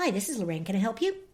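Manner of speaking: even, recorded-message, voicemail-style phone voice. Retelling how she answers the phone for callers: voicemail-like phone greeting. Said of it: "this voice that I guess sounds like voicemail".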